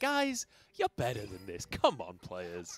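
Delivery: disappointed, let-down dad voice with sing-song swoops. Imitating the co-caster scolding players: imitating a disappointed dad. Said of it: "you sound like the disappointed dad".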